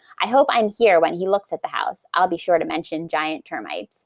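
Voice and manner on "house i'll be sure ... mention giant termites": normal talking voice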